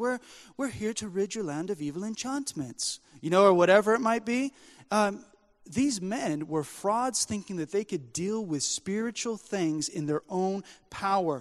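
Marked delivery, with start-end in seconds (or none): 0.0-3.0 put-on British accent. Quoting a movie scene of arriving at a village: Matt Damon's British accent. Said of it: "in his British accent".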